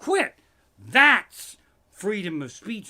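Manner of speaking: high, loud, sarcastic, indignant outburst.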